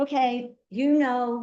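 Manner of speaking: loud, projected voice.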